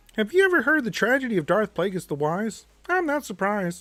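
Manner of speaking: very high, fairly loud frog puppet voice. Doing Palpatine's lines as Dark Lord of the Sith, in a Kermit voice. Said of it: "Dark Lord of the Sith Kermit".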